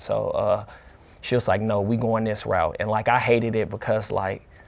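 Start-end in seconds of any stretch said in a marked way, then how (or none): none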